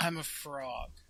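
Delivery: acted crestfallen, dejected and disappointed delivery. Retelling a promo an actor recorded, imitating Johnny Yong Bosch sounding dejected. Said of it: "And he just sounded so dejected".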